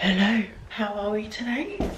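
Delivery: soft, hushed half-whisper. Greeting while someone nearby is asleep, half-whispering. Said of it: "I'm whispering because [name] is asleep".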